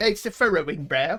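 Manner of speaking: put-on abrupt switch to English accent. Narrating a character's furrowing brow in a scene: british accent. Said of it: "I don't know why I went British".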